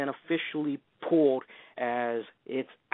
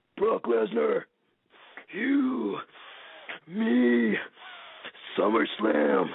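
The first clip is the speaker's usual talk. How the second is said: very slow, drawn-out, swooping, pitched-up call; 8 semitones higher than usual. Imitating a wrestler's dramatic challenge: Triple H impression. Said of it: "I do a pretty good Triple H impression".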